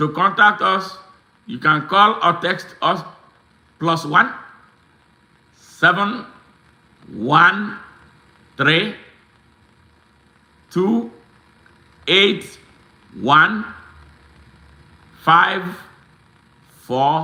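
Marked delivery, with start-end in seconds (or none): 1.5-17.3 slowly spoken. Reading out a contact number so listeners can write it down: slowly. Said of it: "I'm gonna say it slowly".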